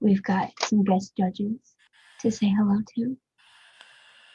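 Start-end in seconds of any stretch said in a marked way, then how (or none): 0.0-3.2 ASMR-style whisper close to the mic. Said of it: "get really close to your mic and whisper".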